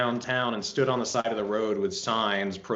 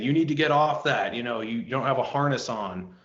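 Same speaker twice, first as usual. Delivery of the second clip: harsh barked screaming, scolding tone; 3 semitones higher than usual. Retelling a guy ordering the speaker off a roof: imitating someone screaming. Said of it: "this guy came over screaming at me saying".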